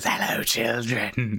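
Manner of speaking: put-on terrifying, horrible, scary whisper. Retelling what a man came out with, in a terrifying voice and horrible whisper. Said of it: "this terrifying voice and this horrible whisper".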